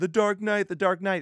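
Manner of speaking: mock very high, rapid, frantic outburst. Retelling how everyone objects: imitating fans freaking out. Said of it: "everyone can freak out and say".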